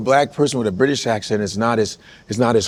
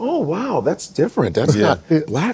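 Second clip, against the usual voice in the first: mock impressed surprise, higher pitch; 6 semitones higher than usual. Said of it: "The auditory is like".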